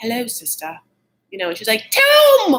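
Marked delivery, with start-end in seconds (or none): 0.0-0.8 put-on dapper voice, higher and quieter. Describing Tom pretending to be dapper with a sister, imitating Tom's dapper act. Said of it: "pretend he's so dapper".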